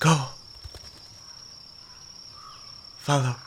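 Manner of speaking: light, soft, whispered feminine voice. Narrating a voice heard in the rustling leaves, in a light feminine voice. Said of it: "swear you hear a light feminine voice".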